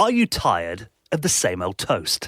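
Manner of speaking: put-on, swooping radio announcer voice. Reading a product description from a website aloud: radio announcer voice. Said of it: "you've got to do it in a radio voice".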